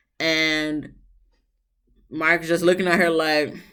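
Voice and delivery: ordinary talk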